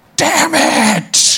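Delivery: put-on, very high-pitched, frantic shouting. Describing a man who kept yelling at 2 a.m., retelling someone yelling. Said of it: "he's just yelling, like".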